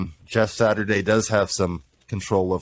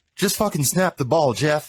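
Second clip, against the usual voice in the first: heated, angry, high-pitched yelling; 8 semitones higher than usual. Retelling how the quarterback yelled at his center: imitating someone yelling angrily. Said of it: "he's just yelling at him".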